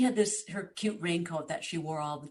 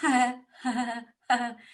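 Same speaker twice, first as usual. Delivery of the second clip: put-on nervous laughter; 6 semitones higher, 5 dB louder than usual. Recounting what she heard from a stall, the speaker is imitating Catherine's nervous laugh. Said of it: "Catherine did the nervous".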